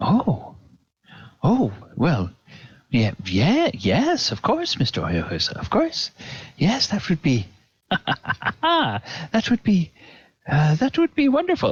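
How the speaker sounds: positively giddy, high stammering gush, tripping over words. A character replies to a man who offered a loan, positively giddy. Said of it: "he seems positively giddy".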